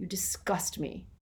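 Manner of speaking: whispered, hushed, full of utter contempt. Dumbledore speaking to Snape, full of contempt. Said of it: "Harry had never heard so much contempt in his voice".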